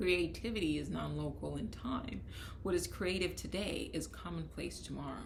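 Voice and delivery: ordinary talk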